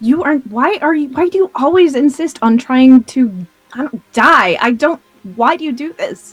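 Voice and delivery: very angry, sputtering, tripping over the words. Scolding an ally in character for risking death: in character, very angry. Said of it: "And just very angrily".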